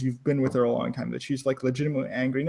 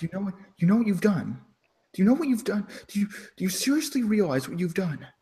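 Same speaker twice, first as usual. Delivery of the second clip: quiet hushed whisper, much higher pitch; 6 semitones higher, 3 dB quieter than usual. As your mistress, looking at you and whispering quietly to you. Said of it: "whispers like quietly to you".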